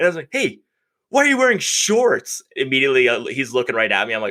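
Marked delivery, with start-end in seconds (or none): 0.3-2.4 mock very high yelled holler. Retelling calling out to a neighbor at the door: imitating own yell. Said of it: "So I yelled out".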